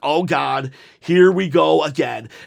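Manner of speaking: ordinary talk, nothing marked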